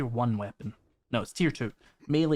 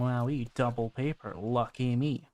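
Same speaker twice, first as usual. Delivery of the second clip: slow, sarcastic, fake excitement and delight. Finding two stacks of paper while looting, sarcastic. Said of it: "That is sarcasm, by the way".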